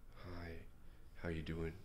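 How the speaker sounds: lifeless, weak, very soft, flat monotone. Showing how a guy with zero passion talks, weak, flat monotone. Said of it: "not just like this weak, ... monotone".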